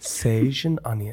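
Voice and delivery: sexy, seductive, sultry voice. Reading a food description aloud to someone with eyes closed, in a sexy voice. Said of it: "I want to hit like a sexy voice".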